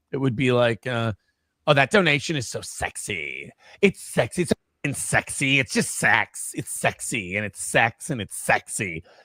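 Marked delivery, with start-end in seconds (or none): 1.6-9.0 caricatured, gushing put-on woman's voice. Retelling an impression of a woman praising a donation: mocking imitation. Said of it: "I started doing an impression".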